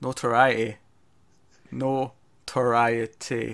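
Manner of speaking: said really slowly with slow, careful pronunciation. Struggling to pronounce a hard word: said really slowly. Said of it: "I need to say that really slow".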